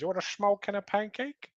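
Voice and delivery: put-on bad Dutch accent, very high and squeaky. Asked to do Dutch, speaker quotes Austin Powers: Goldmember Dutch accent. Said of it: "The O F Gold member of Austin Powers".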